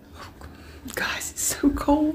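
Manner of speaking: soft, unvoiced whisper.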